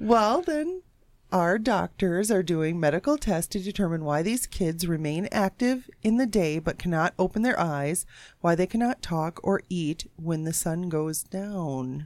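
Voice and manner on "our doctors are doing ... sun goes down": ordinary delivery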